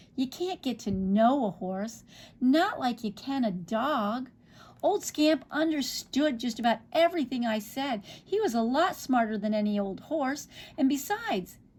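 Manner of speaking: plain reading voice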